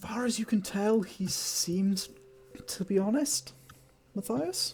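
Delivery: statement lilting up, rising at end on Matthias. Telling a player what an insight roll shows: questioning intonation. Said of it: "You're saying that very question-like".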